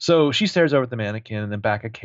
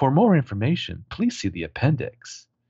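put-on childlike recorded little-girl talking-doll voice; 3 semitones higher than usual. Retelling what a pull-string doll said, recorded little girl voice. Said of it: "this like recorded little girl voice says".

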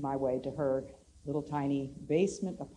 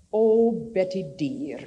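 put-on Scottish accent, called out very loud; 4 semitones higher, 10 dB louder than usual. Retelling what a visiting lady said at the door: Mom Cunningham's Scottish accent. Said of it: "in her wonderful Scottish accent".

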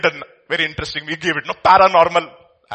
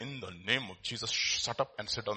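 quiet mutter under breath, lower and quieter; 6 semitones lower, 18 dB quieter than usual. Retelling a preacher's words to a man throwing a tantrum: imitating words under his breath. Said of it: "right there under his breath".

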